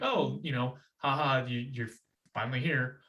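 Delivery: imitated lighthearted, playful teasing tone. Retelling the parents' joking greeting to the brother: imitating a lighthearted tease. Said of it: "the intent was t-, to be lighthearted".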